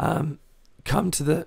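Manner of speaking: voice cracking up high.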